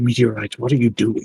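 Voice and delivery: hushed voice. Walking up to the meteorite armor to ask it something, in a hushed tone. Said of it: "in a hushed tone".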